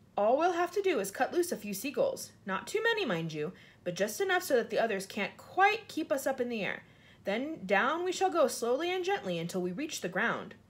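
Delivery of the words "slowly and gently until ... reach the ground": ordinary delivery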